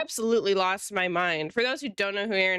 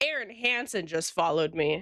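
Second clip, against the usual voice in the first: plain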